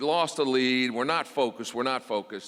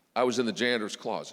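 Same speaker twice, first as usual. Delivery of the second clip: ordinary talk, nothing marked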